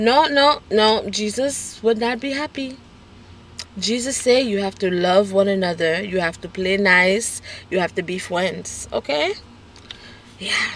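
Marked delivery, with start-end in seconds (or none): 0.0-9.3 put-on, heavy Haitian accent. Recalling a woman stepping in when kids fought, imitating her heavy accent. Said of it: "in her heavy accent and be like".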